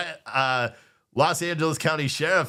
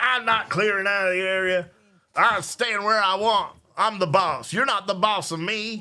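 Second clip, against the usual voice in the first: put-on acted elderly man voice, high; 5 semitones higher than usual. Ad-libbing a man refusing police orders to leave: imitating an old man voice. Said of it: "he probably doesn't talk like that, like an old man".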